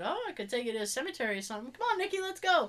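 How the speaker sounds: playful, jokey, needling teasing tone. Retelling an offer to go to a cemetery, retelling teasing someone. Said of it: "I was teasing her".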